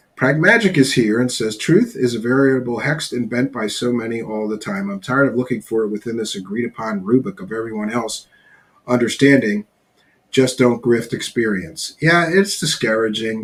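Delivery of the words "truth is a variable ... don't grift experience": plain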